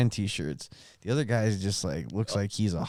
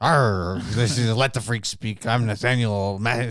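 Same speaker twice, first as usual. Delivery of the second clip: put-on pirate sailor voice; 4 dB louder than usual. Asked by the other speaker to talk like a sailor: put-on sailor voice. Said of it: "Talk like a sailor".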